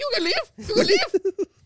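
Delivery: very high, loud, shrill screaming. Retelling how a man with a heavy accent screamed: imitating a heavy-accented scream. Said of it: "such a heavy accent like that screaming at you".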